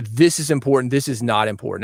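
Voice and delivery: ordinary talk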